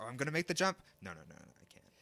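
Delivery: swooping sing-song whine, swinging up and down. Voicing George hesitating on a branch before a jump: George whining. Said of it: "he's whining".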